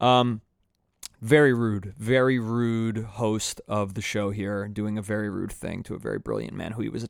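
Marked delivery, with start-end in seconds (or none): none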